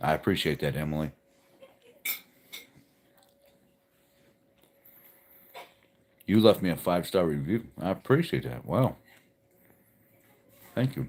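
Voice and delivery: speaking with mouth full of food. Host thanking a listener for a five-star review, talking with mouth full. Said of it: "Sorry for eating, talking with my mouth full".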